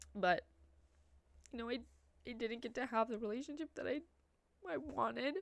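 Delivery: tearful, weeping while talking. Talking about her parents' divorce and her father, crying. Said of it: "I'm not understanding why I'm crying".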